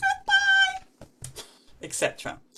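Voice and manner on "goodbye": high-pitched voice, pitched even higher. Showing the goodbye version of a rhyme game: saying goodbye in a high voice. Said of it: "Let's say goodbye as high as we can".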